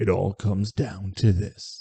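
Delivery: weak, slow attempt at movie-trailer announcer voice. Promoting a championship game after wishing for a booming radio voice: weak attempt at booming movie-trailer voice. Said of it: "such a terrible weak attempt to do it".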